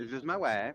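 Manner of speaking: put-on whiny cartoon child voice. Introducing their wife to the others, like Eric Cartman. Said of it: "Why'd you say it like Eric Cartman?".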